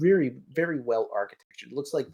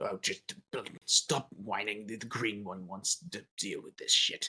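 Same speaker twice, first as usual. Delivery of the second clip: very soft, hushed orc voice, dismissive; 3 semitones lower, 10 dB quieter than usual. Voicing the green one, an orc, in a played scene, Orcish voice. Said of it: "the Orcish that you're hearing right now".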